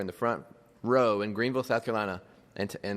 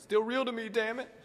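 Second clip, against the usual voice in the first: mock sobbing in a very high-pitched crying voice; 12 semitones higher than usual. Retelling what a crying fan in the bleachers said: imitating someone crying. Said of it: "he's crying".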